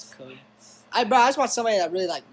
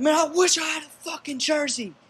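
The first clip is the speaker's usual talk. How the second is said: boastful, very high-pitched bragging voice; 12 semitones higher than usual. Retelling what the coach said in the locker room: imitating Coach Hurd puffing his chest. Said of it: "he'd start puffing his chest out".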